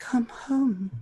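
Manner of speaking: barely audible, faint, distant-sounding high-pitched voice. Narrating a voice heard in the back of the listener's head: very faint voice. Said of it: "a very faint voice in the back of your head".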